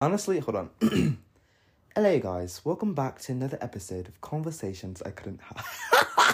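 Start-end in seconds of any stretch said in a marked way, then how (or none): 2.0-6.3 put-on, sing-song British accent. Host redoes the show's intro, trying out a British accent. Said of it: "Y'all like my British accent?".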